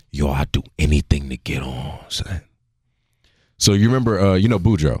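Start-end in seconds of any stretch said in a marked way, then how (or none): 0.1-2.4 soft whisper spoken right into the ear. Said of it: "he whispers in my ear".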